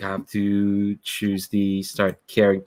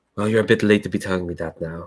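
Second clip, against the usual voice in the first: whispered, quiet delivery. Playing Emilie, answering the conscience on her shoulder, whispering. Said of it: "just kind of whispers to her shoulder".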